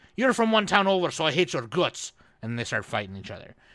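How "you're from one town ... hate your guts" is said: put-on loud Irish accent slipping into Scottish. Imitating people from ireland who hate the next town: irish accent sounding scottish. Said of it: "obviously that guy was an imposter 'cause that was Scottish".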